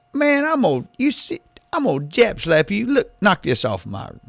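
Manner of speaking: put-on very high, jerky, swooping Louisiana boy voice. Covering for his no-show sidekick the Matador; Matador voice, Louisiana accent. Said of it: "talks like a jerked out paper boy from Louisiana".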